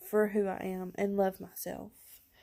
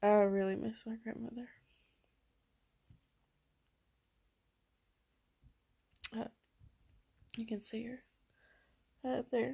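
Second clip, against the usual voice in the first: voice straining, fighting off crying, holding back tears; 2 semitones higher, 4 dB quieter than usual. Talking about their grandmother, pictured up there: holding back tears. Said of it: "I'm trying not to cry".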